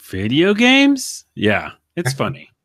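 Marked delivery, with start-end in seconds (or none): 0.1-1.2 rising, question-like intonation on video games. Showing how a podcast name sounds with a question mark: rising question intonation. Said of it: "question mark at the end".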